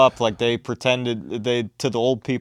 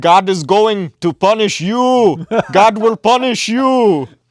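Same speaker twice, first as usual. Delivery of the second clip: put-on Indian accent, very loud and high; 9 semitones higher, 8 dB louder than usual. Retelling what a man told the speaker, imitating the man's accent. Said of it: "I'm just gonna do the accent".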